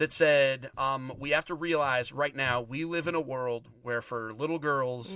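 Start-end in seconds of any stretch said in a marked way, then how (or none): none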